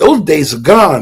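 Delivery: ordinary delivery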